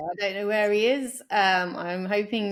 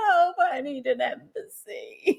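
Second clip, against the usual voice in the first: mock blubbering, tearful, high and drawn-out sobbing; 5 semitones higher than usual. Picturing themselves in dire times, asking for an embassy: mock crying. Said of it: "I'd probably just be crying, going".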